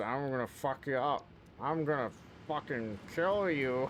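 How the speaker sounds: put-on threatening old woman. Acting out what a grandma would say, in a mock-threatening grandma voice. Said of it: "That's not what she sounds like at all".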